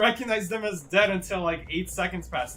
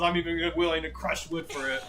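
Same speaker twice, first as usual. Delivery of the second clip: ordinary talk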